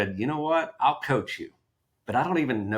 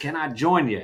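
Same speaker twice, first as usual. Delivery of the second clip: put-on Texas accent, pitched higher than normal; 5 semitones higher than usual. Speaker retells Tom approaching him and his wife in a hot tub: Texas accent. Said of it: "in a Texas accent".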